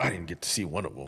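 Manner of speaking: mock disgruntled tone. Retelling what the other guide said: imitating a disgruntled guide.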